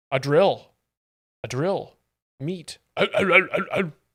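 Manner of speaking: put-on, manly grunt. Comparing a comedian to Tim Allen, doing the Tim Allen man grunt. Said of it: "the Tim Allen man grunt".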